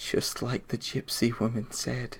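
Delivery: very soft, very quiet, hushed, under the breath. Game master voicing a bandit who drops his crossbow, in a quiet voice. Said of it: "just says in a quiet voice".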